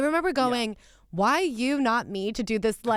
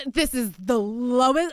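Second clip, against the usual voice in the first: ordinary talk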